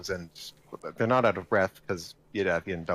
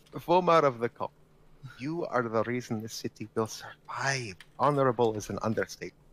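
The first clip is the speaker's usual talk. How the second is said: put-on Scottish and Russian accents blended together; 3 semitones higher than usual. A player speaks in character, addressing another character in the game: mixed Scottish-Russian accent. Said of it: "I'm doing Scottish and Russian at the same time".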